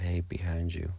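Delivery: ordinary delivery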